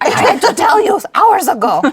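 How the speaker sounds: mock very high, very loud, shrill, swooping furious little-man rant. Describing how their body talks to them, voicing a mock-angry little German man. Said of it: "he's so angry".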